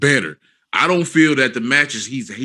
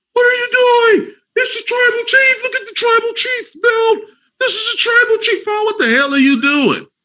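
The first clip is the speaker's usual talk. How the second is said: shrieking, very high, very loud screams; 5 dB louder than usual. Imagining a wrestling scene, imitating Paul Heyman screaming at Daniel Bryan. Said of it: "Paul Heyman over here screaming at Daniel Bryan".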